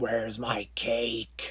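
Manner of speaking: very low, deep, growling zombie voice. Retelling a movie scene about a zombie father: imitating a growling zombie.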